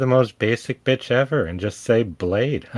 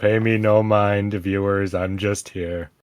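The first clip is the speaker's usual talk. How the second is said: put-on gloomy donkey voice; 4 semitones lower than usual. Addressing the viewers on the show, in an Eeyore voice. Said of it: "is that your Eeyore voice?".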